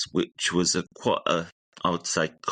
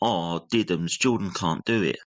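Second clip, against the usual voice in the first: mock-sarcastic, mocking delivery. Recalling how he read the letter to the class, the speaker imitates a sarcastic tone. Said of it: "read out the letter to the class in a sarcastic, uh, sarcastic tone".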